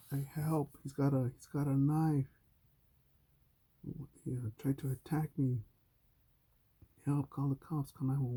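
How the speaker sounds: put-on yelling. Retelling being threatened with a knife, reenacting a yell for help. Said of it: "Let me just yell".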